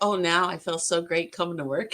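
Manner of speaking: plain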